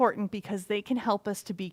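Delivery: plain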